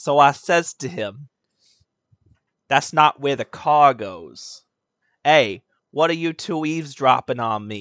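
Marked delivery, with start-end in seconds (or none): 2.7-7.8 put-on New York accent. Retelling a line said to a skinny guy, in a New York accent. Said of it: "I was doing like a New York accent".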